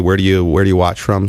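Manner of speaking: ordinary talk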